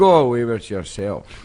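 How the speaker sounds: put-on broad Scottish accent. Retelling what your dad would say about the name, imitating dad's broad scottish accent. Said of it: "my dad's very broad Scotsman. And he'd say".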